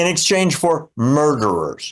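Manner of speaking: usual speaking voice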